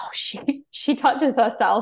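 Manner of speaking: hushed, slow, gossipy whisper. Recalling what girls whispered about a classmate at school, gossipy school whisper. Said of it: "I remember like whispering".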